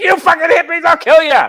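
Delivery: mock sudden, very high, shrill, loud furious outburst. Recalling a scene from Fear and Loathing in Las Vegas, retelling a sudden angry outburst. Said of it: "the dude just suddenly gets all mad".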